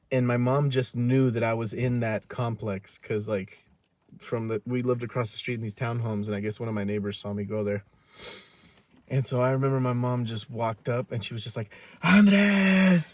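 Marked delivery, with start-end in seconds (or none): 12.0-13.1 mock scream, higher and louder. Retelling a mother searching for her son outside: imitating mom screaming a name. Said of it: "literally screaming at the top of her lungs".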